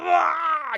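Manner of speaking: very high, drawn-out pained scream. Voicing a stabbed enemy as the game master: enemy screaming in pain. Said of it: "He screams out".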